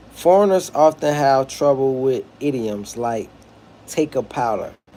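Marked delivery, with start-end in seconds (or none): none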